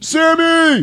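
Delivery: put-on actor's shout. Retelling a movie scene that recalls Supernatural: Jensen Ackles impression. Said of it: "Jensen Ackles".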